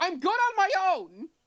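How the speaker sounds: forceful, very loud, shrill outburst. After slamming her fist on the table, the character speaks very loudly. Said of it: "very loudly goes".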